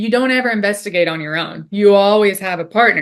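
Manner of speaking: plain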